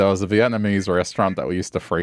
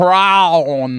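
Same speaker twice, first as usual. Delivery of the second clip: prawn said loud, high, American accent. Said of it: "with an American accent?".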